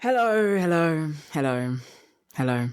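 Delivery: dejected, beaten-down, deflated, defeated tone. Welcomed back onto the show by the host, greeting as Suella Braverman, sounding defeated. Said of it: "you sound defeated".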